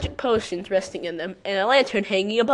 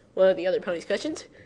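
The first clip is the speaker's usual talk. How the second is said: plain reading voice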